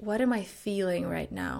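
normal talking voice

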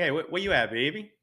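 Louisiana-accented speech. Asked to improvise with the accent, the speaker demonstrates a New Orleans accent. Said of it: "let's hear this accent. Can you do like a little improv?".

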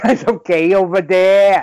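slow, drawn-out, put-on New England accent. Retelling a movie scene, a man checking on kids: imitating a new england accent. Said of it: "the guy who's clearly from New England".

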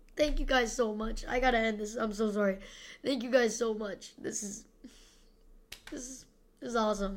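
tearful voice. Host thanking listeners for reaching 12,500 listens, crying. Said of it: "I'm crying on it, bro".

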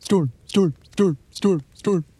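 high, dog-like barking of each word. A player answers another character's repeated shouts during a game, barking. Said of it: "I bark".

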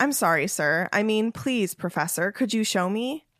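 unrecognizably, extremely, overly polite voice. Narrator reading Tom's reply to his professor, in an unrecognizably polite voice. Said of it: "in an unrecognizably polite voice".

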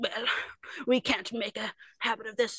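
mean, harsh-sounding voice. Acting out Scrooge after a late night, in Scrooge's mean voice. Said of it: "in his like mean voice".

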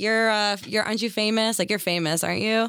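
ordinary talk, nothing marked

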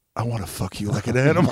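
imitated whisper. Retelling a film scene where she leans over: imitating a whisper. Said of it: "leans over and whispers in his ear".

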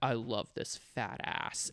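muttered under breath. Quoting what a past sex partner would say, muttered under his breath. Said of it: "he would just mutter under his breath".

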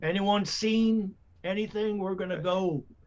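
shouting. Calling out in character to a crowd in town: yelling. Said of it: "I just yell".

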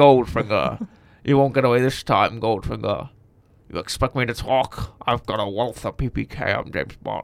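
slurred speech from one side of mouth. Doing a James Bond impression, slurring from half the mouth: Sean Connery impression. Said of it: "I only talk using half of my mouth when I do this".

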